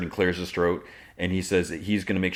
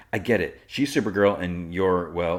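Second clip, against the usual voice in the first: ordinary talk, nothing marked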